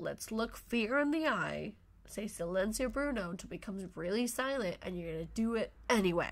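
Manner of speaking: plain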